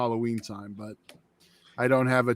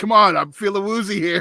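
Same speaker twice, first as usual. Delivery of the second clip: high, loud put-on yell. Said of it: "Pugs are just yelling".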